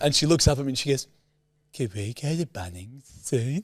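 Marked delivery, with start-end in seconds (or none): 1.7-3.6 put-on soft, slow, babyish little-kid voice. Retelling what she said to him, in a baby voice. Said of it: "maybe save the baby voice".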